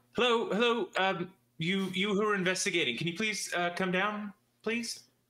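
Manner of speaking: cheery, cheerful voice. Game master voicing a character calling to the investigators from the tavern's side, cheery voice calling out. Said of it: "You hear a cheery voice calling out to you".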